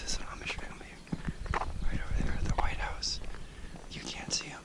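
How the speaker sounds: hushed, breathy, barely voiced whisper. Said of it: "I'm whispering now".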